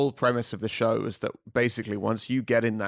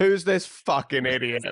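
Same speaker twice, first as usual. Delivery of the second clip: half-joking, yelled angry outburst; 3 semitones higher, 4 dB louder than usual. Retelling yelling in the car at someone driving past: retelling a yell. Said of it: "I was yelling in the car".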